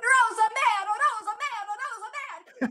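put-on desperate scream, very high pitch. Retelling a mother running through the streets after the car: imitating a mother screaming. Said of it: "she's running through the streets screaming".

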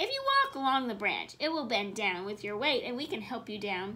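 ordinary delivery, nothing marked

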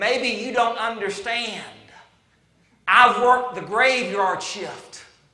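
very slow, deliberate, spelled-out talk. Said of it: "I'm going to talk slow".

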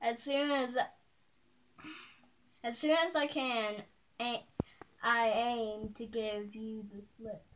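ordinary delivery

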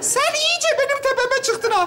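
shrill reprimanding tone.

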